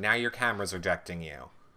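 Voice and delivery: ordinary talk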